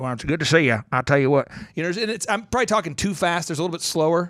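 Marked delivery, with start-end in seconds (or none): 0.0-1.5 put-on Oklahoma accent, drawling, pitched lower. Imitating a local store clerk in Oklahoma: Oklahoman accent. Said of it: "talk, um, in Oklahoman".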